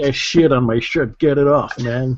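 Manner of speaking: mock Dutch accent, put on. Asked by a co-host to do the shirt joke in a Dutch accent, put-on Dutch accent. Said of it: "Do it in a Dutch accent".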